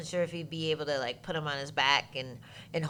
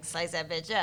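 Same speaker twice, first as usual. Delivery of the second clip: ordinary talk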